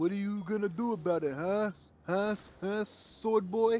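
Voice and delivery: dopey, goofy cartoon voice. Imitating a cartoon character taunting a swordsman: imitating a dumb cartoon voice. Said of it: "he had the dumbest voice ever".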